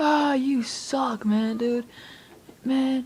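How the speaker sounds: put-on high, drawn-out, angry, annoyed, insulting yell. Retelling a teammate's reaction after dying: imitating a teammate yelling. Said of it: "he was yelling at me like".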